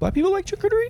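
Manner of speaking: very high voice jumping up nervously. Asking friends about charcuterie, voice rising high. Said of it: "Why did my voice rise?".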